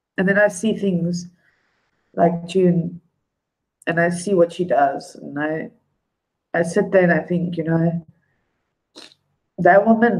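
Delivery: tearful voice, crying while talking. Speaking on stream about someone admired, crying while talking. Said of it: "turn on the water, waterworks".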